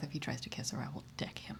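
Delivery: whispered mutter under the breath. Walking to find the mayor in character, muttering under breath. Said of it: "mutter under my breath".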